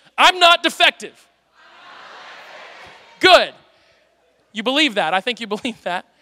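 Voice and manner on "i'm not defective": raised voice, real oomph and passion. Asked to repeat the line with oomph, the speaker says it with passion. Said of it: "So let's do it again".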